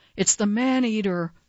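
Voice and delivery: ordinary talk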